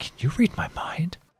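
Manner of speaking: bewildered, befuddled, breathy stage whisper. A player's character asking a stranger they think is a wizard: befuddled. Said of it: "I'm befuddled".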